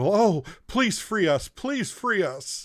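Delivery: very high, begging, pleading little gnome voice. Voicing a caged gnome prisoner who begs the party: pleading caged gnome voice. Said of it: "it is a gnome in the cage".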